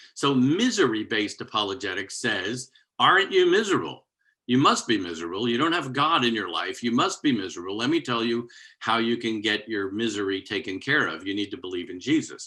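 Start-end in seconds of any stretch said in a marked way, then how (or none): 3.0-12.5 mocking tone, heavily sarcastic. Acting out how misery-based apologetics talks to people: sarcastic tone, acting out an argument. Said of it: "I'm sounding kind of sarcastic on that".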